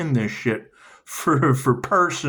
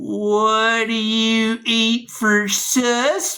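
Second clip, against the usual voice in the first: very slow, high, with "what" drawn out; 8 semitones higher than usual. Doing an impression of a ghost hunter talking to a ghost: imitating a woman talking to a ghost. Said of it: "here's my impression of her talking to a ghost".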